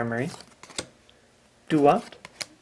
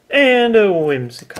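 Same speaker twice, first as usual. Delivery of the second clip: slow, disappointed, let-down delivery. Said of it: "Sounded disappointed".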